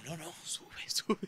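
soft, unvoiced, pleading whisper.

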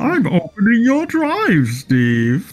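spooky, slow, drawn-out put-on voice swooping up high. Retelling what someone said to Steve, doing it in a Bane voice. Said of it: "I gotta do it as Bane".

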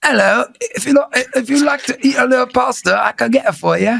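put-on British accent. Having their acting tested on request, the speaker does a british accent. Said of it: "Give me British".

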